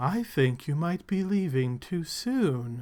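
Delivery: half-whispered, with the word soon stretched out. Voicing a half-whispered voice from a hole in the wall: half-whispered voice. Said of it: "you can hear a whispered voice now".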